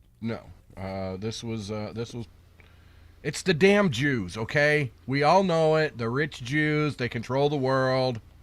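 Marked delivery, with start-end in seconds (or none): 3.2-8.2 mocking, sarcastic tirade. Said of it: "I am being very sarcastic".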